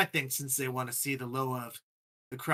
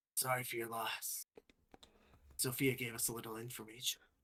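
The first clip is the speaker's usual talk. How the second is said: very soft, very quiet, hushed whisper; 3 semitones lower, 12 dB quieter than usual. Narrator voicing a character who hugs the player tightly, whispering. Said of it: "he whispers".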